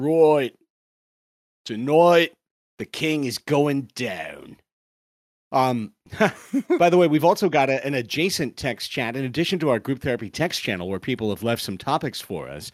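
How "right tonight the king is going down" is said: slow, deliberate, put-on Australian accent. Practicing an accent by copying the guys on Australian Survivor, imitating an Australian accent. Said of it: "I really work on the accent just listening to these guys go".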